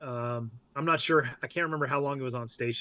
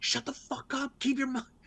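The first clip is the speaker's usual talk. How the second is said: very high, hushed, urgent whisper; 11 semitones higher, 3 dB quieter than usual. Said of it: "we're trying to whisper".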